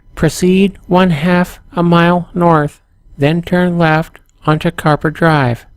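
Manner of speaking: flat, machine-like robotic voice. Narrator voices the GPS giving driving directions, robotic GPS voice. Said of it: "says the robotic voice of the G P S".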